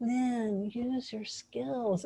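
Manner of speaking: soft, slow, quiet, unhurried half-whisper. Contrasting how an inner guiding voice did not speak: imitating a quiet inner half-whisper. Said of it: "that quiet inner whisper of spirit".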